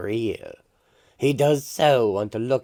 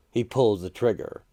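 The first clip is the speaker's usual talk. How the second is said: plain reading voice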